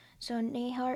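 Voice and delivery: ordinary talk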